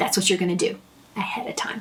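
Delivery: soft, hushed, emphatic whisper.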